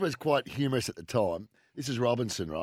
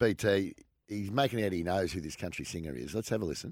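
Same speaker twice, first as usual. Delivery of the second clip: plain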